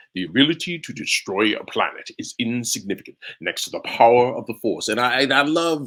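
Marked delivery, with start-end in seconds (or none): 0.1-4.8 masked space villain voice. Recalling doing impressions as a kid: Darth Vader voice. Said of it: "I was doing impressions of everybody from Bugs Bunny to Darth Vader".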